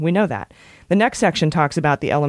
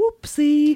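very high, put-on British accent; 12 semitones higher than usual. A speaker repeats his exclamation, this time in a British accent. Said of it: "But in a British accent".

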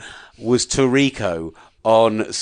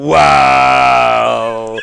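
loud, rough, drawn-out "wow"; 8 dB louder than usual. Retelling a co-commentator's reaction to the kick: imitating Collinsworth saying wow. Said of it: "Collinsworth sat next to him, just went".

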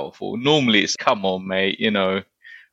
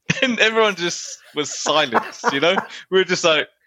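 normal talking voice

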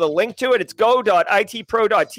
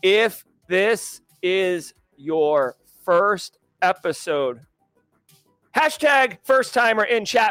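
very slow, deliberate, word by word; 2 semitones lower than usual. Host welcoming first-time viewers in chat, speaking slower. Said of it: "let me say it slower".

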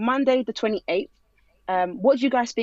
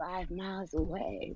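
hushed, very soft, sultry ad-style voice; 3 semitones lower, 13 dB quieter than usual. Imitating a pop-up ad on illegal TV websites: put-on sultry pop-up ad voice. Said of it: "She just put on that voice".

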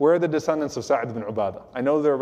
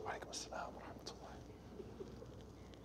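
barely audible, very low whispered voice. Retelling a man returning the Prophet's greeting, in a very low voice. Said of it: "in a very low voice".

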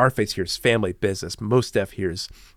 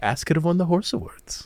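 mock flat, matter-of-fact tone, higher pitch; 7 semitones higher than usual. Repeating the other speaker's lyric line back: imitating a matter-of-fact delivery. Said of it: "You said that so matter-of-factly".

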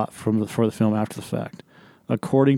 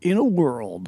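pitched-up movie trailer announcer voice; 5 semitones higher than usual. Joking about redoing a movie trailer: Don LaFontaine trailer voice. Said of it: "should have had Don LaFontaine do the trailer".

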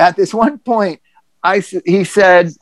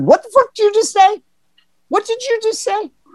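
mock very high, teary, choked disbelief outburst. Retelling own reaction to the therapist's words: retelling own teary choked-up outburst. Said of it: "my teary, choked up, prideful thing said".

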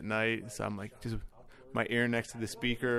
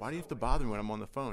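usual speaking voice

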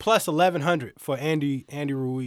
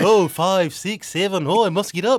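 put-on Irish accent, pitched up and loud; 5 semitones higher, 6 dB louder than usual. Acting out a fighter knocked to the floor during a fight: Irish accent. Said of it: "Now you're Irish".

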